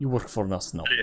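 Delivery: perfect, low-key, soft put-on Russian accent. Imitating gunmen taking over businesses after the USSR fell: Russian accent. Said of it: "In the perfect Russian accent".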